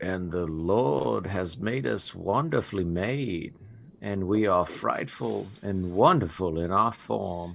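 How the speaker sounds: very hushed, low, under-the-breath mutter. Game narrator voices a character noticing something, muttered under his breath. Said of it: "say under his breath".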